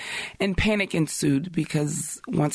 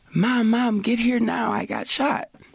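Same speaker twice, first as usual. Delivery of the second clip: put-on, high-pitched screaming; 7 semitones higher than usual. Retelling a phone call from someone who got shot: imitating Zaire screaming. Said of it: "he was screaming".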